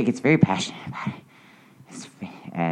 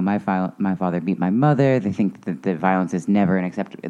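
normal talking voice

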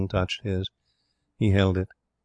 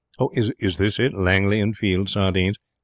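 ordinary delivery

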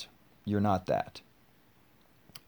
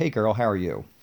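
plain

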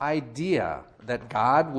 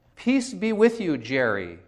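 sweet, gentle, high little nerdy voice; 5 semitones higher than usual. Telling how a seventh grader greeted Jerry in passing, imitating Donald's sweet nerdy voice. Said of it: "in this sweet little nerdy voice".

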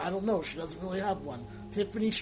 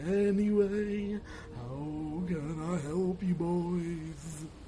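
put-on spectral, ghostly voice, "boys" stretched long. Voicing the River Styx ferryman greeting the boys, in a ghost voice. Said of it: "I'll do a ghost voice".

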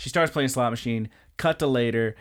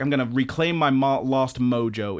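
ordinary talk, nothing marked

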